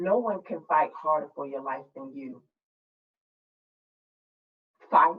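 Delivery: very calm, steady, low therapist-like voice. Recalling a hospital stay, the speaker quotes the therapist: imitating therapist's very calm voice. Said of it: "the therapist in a very calm voice says".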